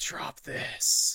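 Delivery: scratchy, rough, raspy voice. Narrating a story, voicing an intimidating man in a raspy voice. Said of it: "Is that raspy enough?".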